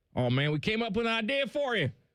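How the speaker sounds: Southern Atlanta drawl. Retelling what Jimmy Powers used to say: imitating Jimmy Powers' Atlanta drawl. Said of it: "so he's got the drawl".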